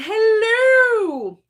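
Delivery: very high, loud hello, long and drawn out. Retelling a greeting from mom in a Mrs. Doubtfire voice. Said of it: "Like Missus Doubtfire".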